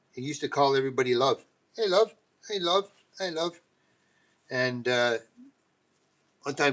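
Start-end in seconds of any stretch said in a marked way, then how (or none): 1.8-3.6 put-on English accent, pitched higher. Retelling how an English coworker used to greet everybody, imitating English coworker's accent. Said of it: "he was from England".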